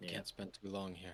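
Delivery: whispering. Whispering to Trey while he is talking: whisper. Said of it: "I'm just gonna whisper to Trey".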